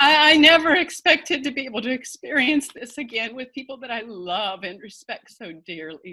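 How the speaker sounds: teary, choking-up voice on the verge of tears. Talking about experiencing music again with loved ones, about to cry. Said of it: "Gosh, I'm going to cry".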